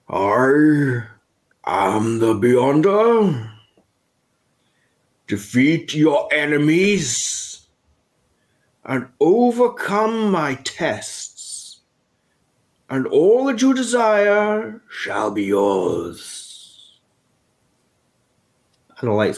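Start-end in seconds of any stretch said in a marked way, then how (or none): 0.1-16.9 booming, very slow godlike voice, "I" stretched. As the storyteller narrates the room darkening, a booming Beyonder voice speaks. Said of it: "a booming voice is heard and it says".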